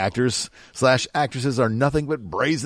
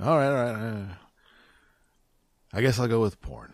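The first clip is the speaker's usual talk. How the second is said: despondent, quieter; 3 dB quieter than usual. Speaker given a choice between two topics picks one, despondent. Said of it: "That's a very despondent voice".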